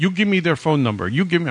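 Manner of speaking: put-on Middle Eastern accent. Retelling a caller demanding phone numbers: imitating a weird Middle Eastern accent. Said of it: "weird, like, Middle Eastern accent".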